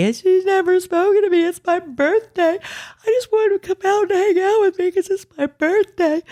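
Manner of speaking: mock very high, tearful sobbing voice. Retelling what a sobbing girl said at her birthday: imitating someone sobbing. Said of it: "while she's sobbing on me".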